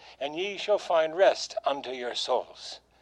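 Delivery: ordinary delivery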